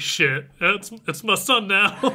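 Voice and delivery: emotional, choked-up voice. Retelling a character's reaction in a story: imitating a choked-up voice. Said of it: "he's super choked up".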